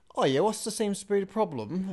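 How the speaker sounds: put-on English accent drifting toward Australian. Retelling what a woman at a card machine said, in a fake Australian-sounding accent. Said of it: "I thought that was meant to be Australian".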